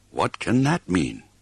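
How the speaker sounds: muttered. Reading a story aloud, giving Leoric's reply to the wisdom owl, muttered. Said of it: "Muttered Leoric".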